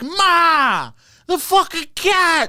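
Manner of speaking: very high, very slow, drawn-out Boston hollering. Describe the TikTok guy with the creepy cat to friends, imitating a Boston TikTok guy yelling. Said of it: "and he's yelling".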